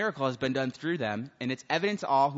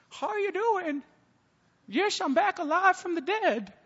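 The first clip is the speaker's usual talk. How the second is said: put-on very high, trembling, quivering elderly voice. Telling how his dead grandmother showed up at his door: old quivering voice. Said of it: "with her old, like, quivering voice".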